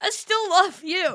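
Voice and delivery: put-on crying outburst, very high and loud. Retelling what she said in class when she started crying: retelling a tearful line. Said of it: "I start crying".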